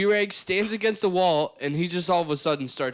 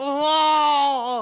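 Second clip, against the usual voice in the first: put-on screaming, higher and louder; 8 semitones higher, 5 dB louder than usual. Retelling how Barry kept calling out to busy staff: imitating someone screaming. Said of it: "He's screaming".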